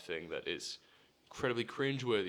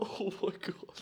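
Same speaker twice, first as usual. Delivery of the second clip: mock mortified, embarrassed cry, very high-pitched; 10 semitones higher than usual. Retelling a friend's embarrassed reply backstage after a hug: imitating an embarrassed friend. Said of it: "He's so embarrassed".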